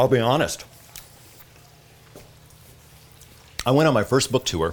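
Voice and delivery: speaking with food in mouth, chewing. Answering an interviewer's question, talking with food in mouth. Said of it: "I'm talking with food in my mouth".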